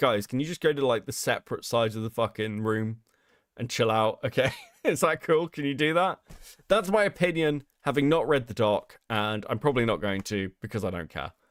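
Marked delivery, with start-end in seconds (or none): none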